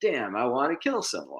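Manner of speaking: put-on high, ranting half-yell, fairly mild. Retelling what a man on the subway was screaming, imitating a man screaming. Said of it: "among the stuff he was screaming about".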